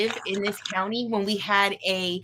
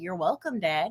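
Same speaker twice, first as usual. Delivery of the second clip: put-on, very sarcastic, pointed jab; 4 semitones lower, 4 dB quieter than usual. Retelling thanking a dad after a lock broke: retelling own sarcastic remark. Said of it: "there's me being sarcastic".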